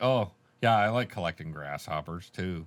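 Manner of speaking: condescending, patronizing, talking-down tone. Acting out how he could have sounded in the scene, mock-condescending. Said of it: "could have been very condescending".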